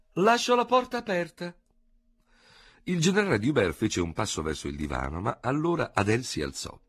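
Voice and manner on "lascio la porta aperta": loud, bright, cheerful call, pitched very high. Madame Léonie calling back as she leaves the room, loud and cheerful. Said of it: "dicendo forte, in tono lieto".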